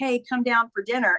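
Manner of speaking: ordinary talk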